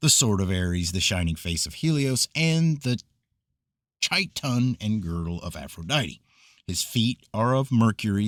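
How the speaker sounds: usual speaking voice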